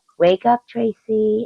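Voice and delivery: high, soothing, sweet and kind voice. Retelling how the friend sounds as an alarm clock: really kind, sweet voice. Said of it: "in, like, a really kind, sweet voice".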